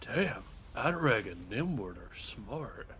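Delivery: muttered under breath. A player speaking as their character in the game, muttered under breath. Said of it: "I'll mutter under my breath".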